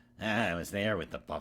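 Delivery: put-on whiny, whining voice with a Chicago accent. Describing Dances with Wolves, the speaker does a whiny Kevin Costner impression. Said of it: "that whiny Chicago like".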